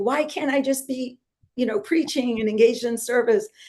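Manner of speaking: mock tearful, pleading crying voice. Retelling yelling at Krishna while washing diapers, imitating own past crying. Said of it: "I'm kind of crying like this".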